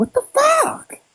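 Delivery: very high, squeakiest possible outburst. Retelling the reaction when she said what she studied; most high-pitched voice. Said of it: "I literally said it in the most high pitched voice".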